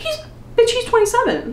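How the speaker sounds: high, startled squeal.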